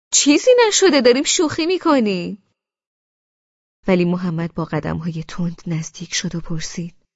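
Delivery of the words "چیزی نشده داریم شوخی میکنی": loud, very high-pitched shout. [name] to the narrator right after she screams, shouting. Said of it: "امیر فوری فریاد زد".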